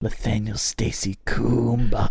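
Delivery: whispered. Reading out donor names into the listener's ear, whispering.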